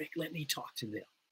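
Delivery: very soft, hushed whisper, barely audible, spoken aside. Retelling what the former pastor whispered from the front row: imitating a whisper. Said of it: "he whispered to me".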